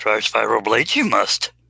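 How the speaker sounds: rough, raspy, creaky sage voice. Reading viewer comments aloud, joking: Yoda voice. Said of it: "with Yoda's voice".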